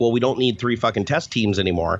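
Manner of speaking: ordinary talk, nothing marked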